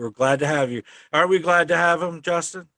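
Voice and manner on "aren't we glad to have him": normal talking voice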